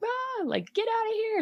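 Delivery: very high, frightened, panicked shriek. Retelling the brother screaming in his sleep: imitating someone screaming. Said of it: "my brother was screaming in his sleep".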